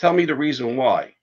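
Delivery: ordinary delivery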